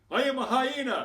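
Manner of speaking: very loud, shrill, high, triumphant bellow. Retelling what he declared over a chicken bone: retelling a loud proud shout. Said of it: "in his loudest, proudest voice".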